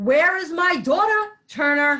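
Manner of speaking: high, furious, demanding yell. Asking where the daughter is after the grandfather forgets her: yelling. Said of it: "What's the yelling about?".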